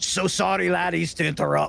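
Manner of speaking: put-on very Scottish, broad accent with gruff voice. A tabletop player voices his disguised character addressing a group, in a gruff scottish accent. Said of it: "He's very Scottish with a gruff voice".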